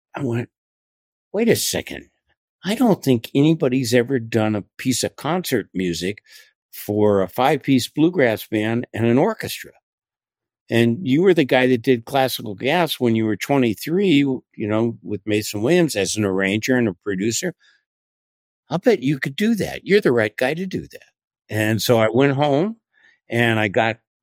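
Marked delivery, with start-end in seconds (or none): none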